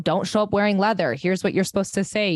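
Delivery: ordinary talk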